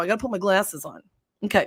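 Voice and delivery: normal talking voice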